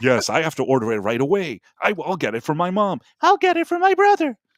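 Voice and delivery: high, swooping, gushing, fawning sales voice. Retelling infomercial guests kissing each other's ass: mock fawning praise. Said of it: "kissing each other's ass".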